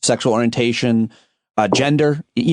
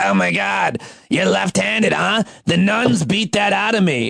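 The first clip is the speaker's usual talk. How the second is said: put-on creaky, raspy old smoker voice, pitched up; 8 semitones higher than usual. Retelling what an old woman at the poll said, old smoker's voice. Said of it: "one of those old people who smokes voice".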